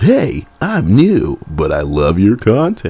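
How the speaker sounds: goofy put-on voice, high, swooping and sing-song. Greeting a commenter and reading out their comment, in a funny voice. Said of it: "read their comment and like a funny voice".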